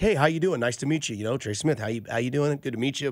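very soft-spoken, polite, super nice tone. Imitating a player off the field greeting people: imitating a soft-spoken nice guy. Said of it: "super nice, soft-spoken".

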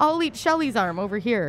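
normal talking voice

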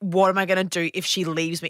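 ordinary talk

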